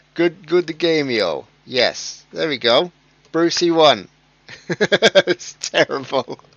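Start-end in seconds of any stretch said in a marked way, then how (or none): 0.2-1.5 bad, failed, fake Spanish accent. Trying the Spanish accent again after failing: bad Spanish accent. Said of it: "I tried and failed horribly".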